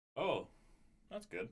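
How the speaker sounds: dry sarcasm. Reacting to hearing that commenters are transphobic: sarcastic. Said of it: "that was a sarcastic, "That's good."".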